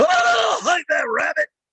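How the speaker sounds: very high, slow, drawn-out cartoon-style yell. Showing another cartoon voice: Yosemite Sam voice. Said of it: "You want Yosemite Sam?".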